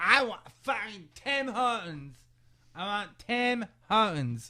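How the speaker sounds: acted, wasted, high-pitched, drawn-out drunken voice. Retelling what a wasted companion in the back said, imitating Blade drunk. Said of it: "you did say it like that".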